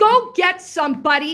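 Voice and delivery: speaking loudly. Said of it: "If you wanna raise your voice".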